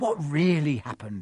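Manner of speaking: plain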